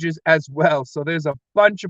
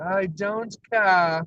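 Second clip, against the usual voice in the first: terrible, clumsily laid-on put-on British accent; 3 semitones higher than usual. Speaker quoting Alice from Alice in Wonderland, bad British accent as Alice. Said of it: "I do a terrible British accent".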